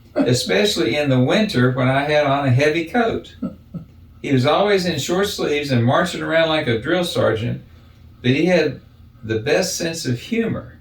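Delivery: ordinary delivery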